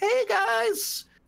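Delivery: put-on six-year-old voice. Retelling a stream where a man pretended to be six: imitating a man faking a child's voice. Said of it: "a dude pretending to be six years old".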